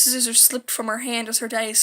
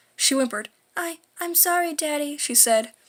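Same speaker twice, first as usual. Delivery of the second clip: plain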